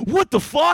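put-on annoyed, angry, mad outburst. Retelling a driver's reaction to a truck beside her: imitating her being mad. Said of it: "she's all mad about it".

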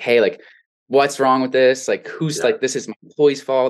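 put-on crying voice. Retelling a phone call about an unprofitable payroll: retelling own crying on the phone. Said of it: "I'm just crying on the phone to him".

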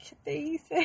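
put-on shaking voice. Retelling a past exchange with her mom, acting out her past self shaking. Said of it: "And I'm just over here shaking".

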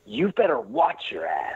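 swooping, theatrical delivery played for show. Performing a film quote live after being asked: acted movie line delivery. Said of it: "a live performance of this correct answer".

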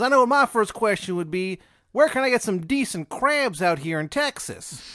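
bad Maryland accent. Retelling a story, quoting a man's first question: bad Maryland accent. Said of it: "a really shitty Maryland accent".

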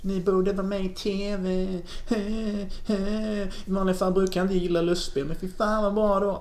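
put-on whiny regional accent. Retelling how a woman from Halmstad theater praised them, in a put-on whiny dialect. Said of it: "jag fick till någon sån gnälldialekt".

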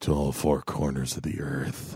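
unsettling, hushed creepy-man voice. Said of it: "here's a creepy line".

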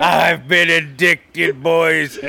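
put-on heavy Minnesota pirate accent. Asked if they are starting to sound like a pirate, answer in a heavy minnesota pirate accent.

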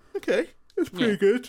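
high, loud words stretched through a yawn. Tired listener reacting to a described film shot, yawning. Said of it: "Don't take my yawning".

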